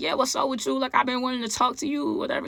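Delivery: put-on drowsy, sleepy late-night tone. Retelling answering a long-awaited phone call, speaker puts on a fake sleepy nighttime voice. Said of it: "I got the fake sleepy nighttime voice on".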